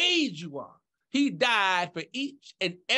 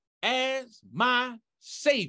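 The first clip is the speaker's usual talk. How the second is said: very slow, drawn-out delivery. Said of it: "I'm gonna say them slowly with you".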